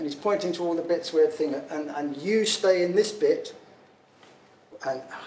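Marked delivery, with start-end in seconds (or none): 1.7-3.5 heavy, broad put-on Swedish accent. Retelling what a team member said while showing the car: imitating a broad Swedish accent. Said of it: "with a broad accent".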